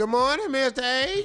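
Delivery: mock cheerful voice. Imitating Monica's greeting of good morning in Monica's happy voice. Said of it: "This her happy voice".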